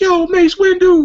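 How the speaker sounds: very high, loud holler. Retelling what people shouted from passing cars: imitating people yelling from cars. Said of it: "yelling out of cars".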